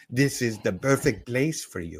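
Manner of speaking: put-on French-accented delivery. Imagining someone inviting a person over to the club: Olivia Renard, French accent. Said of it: "would say it in a French accent".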